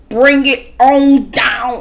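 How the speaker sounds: unhurried, slow, drawn-out, calming and easy. Telling listeners to calm down, in Candy voice. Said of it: "in my Candy voice".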